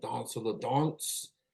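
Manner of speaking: Danse la Danse said in elegant French pronunciation. Naming the band's new record on air: elegant French pronunciation. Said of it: "I'm just gonna say it like that 'cause it sounds elegant".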